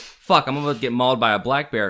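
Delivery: normal talking voice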